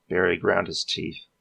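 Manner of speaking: ordinary delivery, nothing marked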